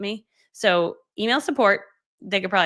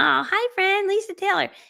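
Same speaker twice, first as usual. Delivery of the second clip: put-on cutesy baby talk, very high pitch; 12 semitones higher than usual. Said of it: "talk in, like, baby voices to each other".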